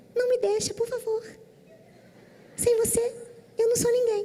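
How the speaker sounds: very high, sweet, pleading little voice.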